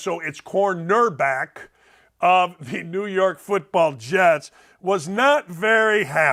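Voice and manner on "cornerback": cornerback said slowly and deliberately. Describing a football player, saying cornerback slowly to avoid saying quarterback. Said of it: "I got to say it slowly".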